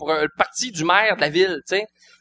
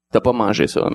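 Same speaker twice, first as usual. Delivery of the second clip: put-on deep, calm, big composed voice, lower; 9 semitones lower than usual. Retelling what the stand-up classmate said: imitating a deep, calm voice. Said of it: "il a une grosse voix, euh, posée".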